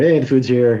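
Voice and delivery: normal talking voice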